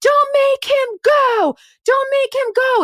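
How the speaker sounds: shrill, high, frantic, desperate pleading scream. Recounting a woman screaming at a cop escorting a man inside, retelling her scream. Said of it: "is screaming at the cop".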